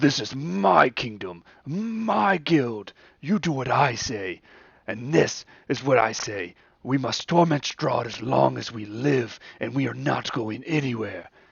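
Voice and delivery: argumentative tone, pitched high. Voicing Vladimir arguing back with Sir Godfrey: Vladimir arguing. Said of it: "arguing with Vladimir".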